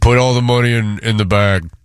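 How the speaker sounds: mock, put-on guy voice. Friends asked to try their guy voices with a stick-up line: put-on guy voice. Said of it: "Let me hear your guy voice".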